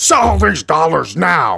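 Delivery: slow, angry, pushy, aggressive hard-sell delivery. Acting out how they pushed selling dollars, in a mock-aggressive sales pitch. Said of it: "they were more like this... this is what I envision when I think of aggressive".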